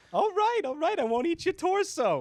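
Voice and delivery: put-on very high, loud old-cartoon dog voice. Voicing an embarrassed big cat: Hanna-Barbera cartoon dog voice. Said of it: "made him sound like a cartoon dog from a Hanna-Barbera show".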